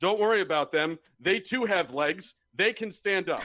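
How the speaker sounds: mock cheeky, pointed, lightly projected tone. Retelling turning to the people in front at a sporting event, said very loudly. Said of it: "said very loudly".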